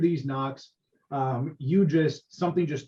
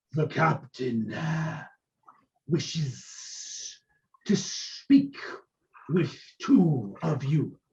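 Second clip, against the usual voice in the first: reptile creature voice, hissing on the esses. A game narrator voices a large lizard person speaking through a door, in a hissing lizard-folk voice. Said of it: "The the intonation of the voice, the hissing that they do".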